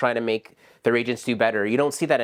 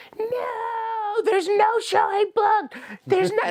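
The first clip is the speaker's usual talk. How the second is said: put-on violent, angry screaming, much higher. Retelling how the person inside screamed at them over a booked showing: retelling violent screaming. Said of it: "and I mean violently screaming".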